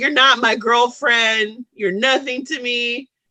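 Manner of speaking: ordinary delivery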